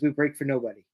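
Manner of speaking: ordinary talk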